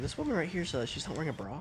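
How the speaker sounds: hushed half-whisper, soft and secretive. Retelling what a coworker said at the register: imitating a coworker half-whispering. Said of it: "whispering really under us".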